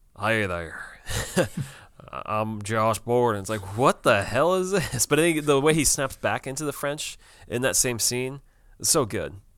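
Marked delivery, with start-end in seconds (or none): 0.2-3.4 put-on Kansas man's accent, slower. Recapping a scene where a character slips into a Kansas man accent. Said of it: "speaking like a Kansas man".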